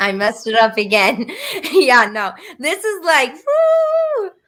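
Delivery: high, loud laughter.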